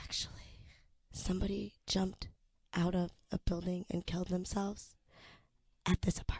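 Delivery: mock-somber serious tone. Retelling what she said while the two of them joked, mock-somber serious tone. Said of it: "in a very somber, like serious tone of voice".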